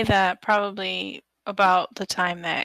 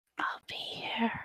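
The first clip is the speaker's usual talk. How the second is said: creepy ghost voice, much quieter; 3 semitones higher, 12 dB quieter than usual. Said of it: "like a creepy ghost voice".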